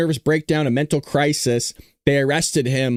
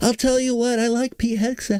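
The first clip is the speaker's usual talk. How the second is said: slightly nasal voice, pitched up; 9 semitones higher than usual. Describing how Trump started talking nasally: nasal Trump impression. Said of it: "Trump is doing a little nasally too".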